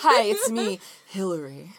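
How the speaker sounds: put-on slow, drawn-out voice. Imitating Hillary, who is present, doing a Hillary impression. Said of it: "That's my impression of you".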